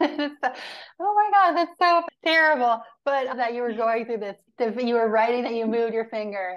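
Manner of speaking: quick words spoken through laughter. Reacting to the other person logging every finger movement, laughing while talking. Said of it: "I'm sorry, I'm laughing".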